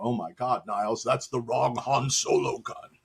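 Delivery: over-the-top exclamation, played like a bad sitcom. Joking about a mix-up like a bad sitcom episode: Frasier impression. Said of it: "That's my Frasier impression".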